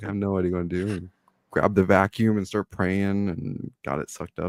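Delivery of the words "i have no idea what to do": play-acted, frantic, panicked freaking-out blurt. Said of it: "reacting now and freaking out".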